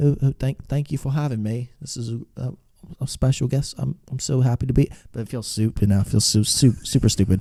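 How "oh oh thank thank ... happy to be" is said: fake British accent, higher. Acting out a planned podcast intro as the guest: put-on British accent. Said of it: "a British guy".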